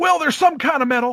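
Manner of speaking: very high stammer that stops and corrects itself. Retelling the announcer correcting himself: imitating Jim Ross stuttering. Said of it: "he goes".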